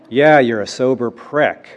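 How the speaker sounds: put-on loud, drawn-out bellow in an old-timer voice. Recounting an old-timer at the back of the room, retelling his bellow. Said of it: "this old-timer bellows".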